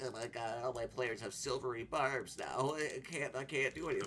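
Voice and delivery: whiny griping. Mocking players who complain about a card: imitating people complaining. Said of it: "everyone bitches about it".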